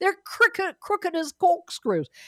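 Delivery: high, weak, half-hearted put-on Cockney accent. Quoting a man on the british monarchy, in a not-so-good cockney accent. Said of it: "I can't do a good Cockney accent".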